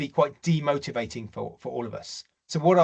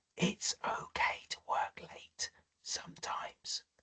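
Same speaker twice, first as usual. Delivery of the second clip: slow, drawn-out, very hushed whisper; 4 semitones higher, 14 dB quieter than usual. Giving career advice and announcing the next line will be whispered. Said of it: "I'm going to whisper this".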